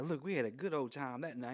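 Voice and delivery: amused, laughing-it-off, dismissive delivery. Retelling how Bill Clinton reacted when handed the file: imitating Bill Clinton laughing it off. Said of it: "He starts laughing like it's funny".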